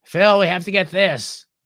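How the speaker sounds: loud, obnoxious, grating voice. Retelling a woman urging her husband, imitating her grating voice. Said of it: "her voice was just grating".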